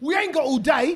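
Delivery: proper London accent. Giving more London driving phrases, in a London accent. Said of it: "you have to sound London".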